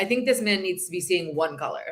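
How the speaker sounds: plain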